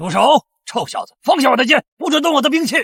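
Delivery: fierce angry shout. A character confronts a young man: fierce angry shout. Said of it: "你凶什么凶？".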